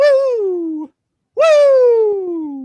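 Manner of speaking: very high, loud, long drawn-out belted woos. Trying the wrestler's woo when asked: Ric Flair woo. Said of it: "Ric Flair's woo".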